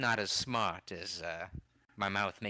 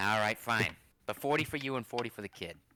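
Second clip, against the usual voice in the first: put-on Australian accent; 3 semitones higher, 3 dB louder than usual. Voicing a character in a dice game, the speaker uses an australian accent. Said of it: "It's so hard to keep track of an Australian accent".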